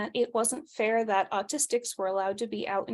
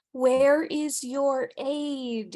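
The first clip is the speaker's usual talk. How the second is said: very slow, patronising, condescending talk-down tone; 4 semitones higher, 4 dB louder than usual. Retelling what people ask when seeing the wheelchair: imitating a condescending voice. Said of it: "in a very condescending voice".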